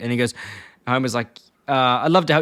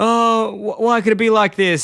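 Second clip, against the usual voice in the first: breaking down, slow and high, "oh" drawn out; 9 semitones higher, 3 dB louder than usual. Retelling how a man reacted to finding the orphanage gone: mock breaking down. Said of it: "he starts cracking".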